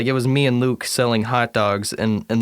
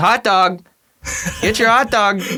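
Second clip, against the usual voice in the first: acted, very high, shrill, high-pitched scream; 9 semitones higher, 4 dB louder than usual. Retelling a friend walking into a movie theater: imitating a friend screaming. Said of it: "he just screams".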